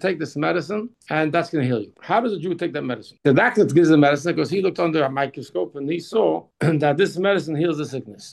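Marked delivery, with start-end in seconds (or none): none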